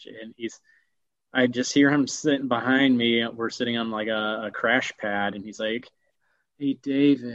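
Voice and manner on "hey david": imitated tired, weary-sounding voice. Retelling what the one sitting behind him said, imitating him sounding tired. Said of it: "he just sounds so tired".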